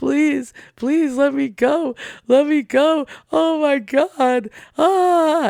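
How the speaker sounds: put-on, very slow, high, drawn-out, desperate screaming plea. Retelling how a beaten thief begged for his life: imitating a screaming plea. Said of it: "the guy's screaming and pleading for his life".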